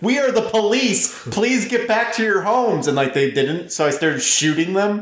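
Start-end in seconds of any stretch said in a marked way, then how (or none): 0.0-2.9 mock, high, bossy, authoritative police yell. Recounting playing a game with friends, retelling yelling at civilians. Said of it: "I started yelling at civilians".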